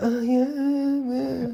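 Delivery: very high, drawn-out, ditzy eighties bimbo voice. Describing an older movie's main character girl, the speaker imitates her eighties bimbo voice. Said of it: "like such a bimbo, and like an eighties bimbo too".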